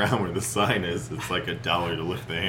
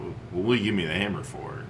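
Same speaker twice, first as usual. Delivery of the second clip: usual speaking voice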